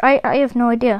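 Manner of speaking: ordinary talk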